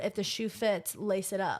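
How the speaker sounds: usual speaking voice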